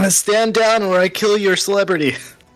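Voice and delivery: loud threatening yell. Voicing a character in a tabletop game, yelling a threat. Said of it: "He's gonna yell".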